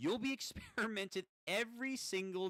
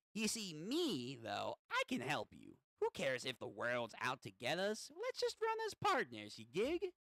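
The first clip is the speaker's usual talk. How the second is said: small, impish, swooping gremlin voice. Speaker voicing a creature character addressing a kid: little gremlin voice. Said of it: "I'm gonna give him like a little like gremlin voice".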